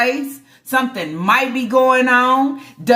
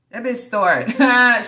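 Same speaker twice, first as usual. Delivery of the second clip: plain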